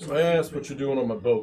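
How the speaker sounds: plain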